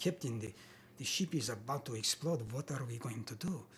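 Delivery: put-on Russian accent. Retelling how they read a part, in a russian accent. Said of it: "they wanted me to read it with a Russian accent".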